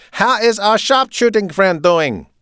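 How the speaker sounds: loud, insistent, demanding tone at a very high pitch. He repeats his unanswered question to Zach, louder and demanding. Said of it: "he asked in a louder, more demanding voice".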